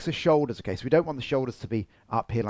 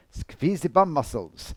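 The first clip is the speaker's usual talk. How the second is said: put-on German accent, slower. Coaching posture with a partner, giving an instruction in a put-on german accent. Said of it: "I don't know why I did a German accent".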